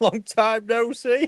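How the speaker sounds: speaking through laughter. Greeting the audience after a long absence, laughing while talking. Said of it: "couldn't say that without laughing".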